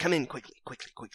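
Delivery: soft, hushed half-whisper under the breath. Voicing a shopkeeper unbolting the door for the group: half-whispering. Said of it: "he whispers".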